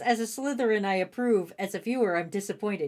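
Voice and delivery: ordinary delivery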